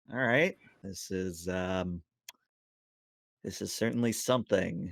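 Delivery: normal talking voice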